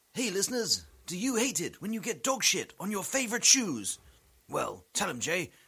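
goofy, silly radio advert announcer voice. Thinking on the fly and starting a bit, in a silly radio voice. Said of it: "Should I do it in the silly radio voice?".

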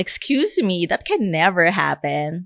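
put-on derogatory, condescending, swooping talking-down voice. Imitating people who dismiss fans as delusional: imitating a condescending tone. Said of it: "the condescending tone that".

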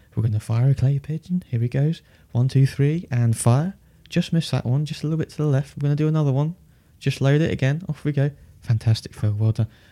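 put-on gentlest, softly spoken, hushed Scottish accent. Retelling what a man said at a clay pigeon shoot, in the softest Scottish voice. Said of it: "the softest Scottish voice I've ever heard".

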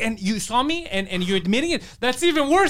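mock angry outburst. Retelling the cyclist answering the driver: imitating someone losing it. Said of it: "she loses it".

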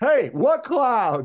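shrill, booming, very loud, high-pitched yell. Repeating a favorite line from a scene to others who love it, imitating Stallone yelling. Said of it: "He just yells".

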